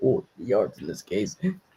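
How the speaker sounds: low, soft mocking narrator voice. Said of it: "kept saying".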